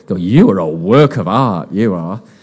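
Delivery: slow, playful, cheeky delivery. Leading a congregation to repeat a line, said a little bit cheekily. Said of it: "say it a little bit cheekily".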